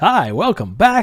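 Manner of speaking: corny chipper host voice. Offering to show the listeners a special voice: cheesy upbeat voice. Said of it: "You guys want to hear my cheesy upbeat voice?".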